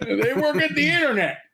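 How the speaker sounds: put-on very high elderly man voice. Repeating another speaker's phrase back at them, in a mock old man voice. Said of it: "You sound like an eighty year old man".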